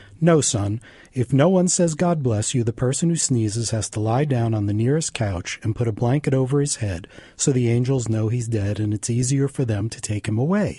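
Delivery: plain reading voice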